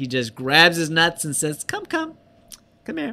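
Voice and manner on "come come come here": put-on ladylike voice, higher and quieter. Retelling the film scene where Noxzema grabs his nuts: imitating Noxzema doing it like a lady. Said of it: "But he does it like a lady".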